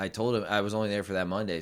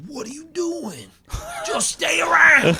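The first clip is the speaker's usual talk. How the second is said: put-on scolding tone, higher and louder; 8 dB louder than usual. Retelling how a friend scolded a change of plans: imitating a friend scolding. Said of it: "and he was like".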